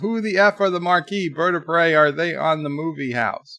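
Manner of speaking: usual speaking voice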